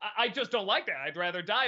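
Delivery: ordinary delivery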